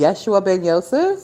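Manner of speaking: put-on sarcastic, knowing tone. Retelling own reply to a man on a bus: imitating own sarcastic remark. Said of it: "here come my sarcastic behind".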